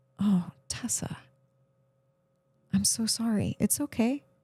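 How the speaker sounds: soft, gentle, soothing, comforting voice. Showing how to speak kindly to someone upset: gentle comforting voice. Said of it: "speak to myself in that same voice".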